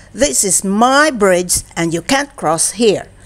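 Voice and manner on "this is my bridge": ordinary delivery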